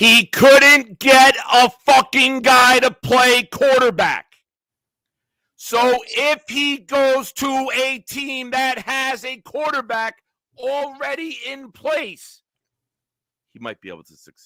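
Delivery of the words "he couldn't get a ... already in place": drawn-out shouting, very loud, high, slow. Arguing about a coach's record with another speaker: yelling. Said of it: "Sorry for yelling".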